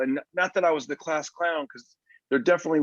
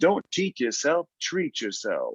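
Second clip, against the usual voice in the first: put-on smooth, suave, smooth-talking voice. Retelling how a guy upsold burgers, imitating a smooth, suave upseller. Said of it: "had a really smooth type of vibe".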